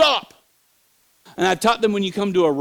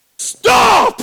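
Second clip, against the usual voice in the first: huge high shout, like a car horn blaring. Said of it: "And I yelled".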